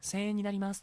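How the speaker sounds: tiny soft voice. Retelling how a part-timer speaks at the register: imitating a tiny quiet voice. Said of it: "ちっせえ声で喋ってた".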